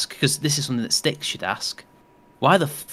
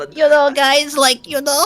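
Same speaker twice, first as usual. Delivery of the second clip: put-on Eastern European speech, higher and louder; 13 semitones higher, 7 dB louder than usual. Imitating the way V talks, after mistaking him for Spanish: imitating V's way of talking. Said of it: "Just the way he".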